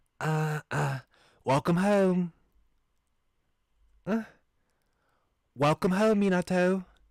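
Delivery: high-pitched voice. Reading a character's line welcoming the narrator home, in a high-pitched voice. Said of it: "that was his high pitched voice".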